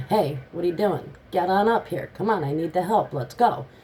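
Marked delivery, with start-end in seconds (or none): none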